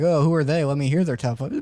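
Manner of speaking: ordinary talk, nothing marked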